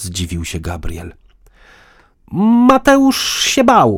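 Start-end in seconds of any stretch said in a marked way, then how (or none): 2.7-4.0 loud, very high, blurted outburst. [name] answers Gabriel's question, blurting it out in a loud outburst. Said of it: "wyrzuciła z siebie [name] głośnym głosem".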